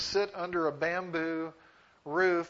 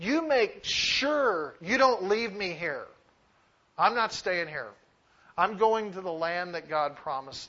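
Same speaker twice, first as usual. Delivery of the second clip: put-on urgent pleading voice. Acting out the patriarchs' request to be carried home: imitating Jacob's urgent pleading tone. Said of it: "if you get the tone in their voice".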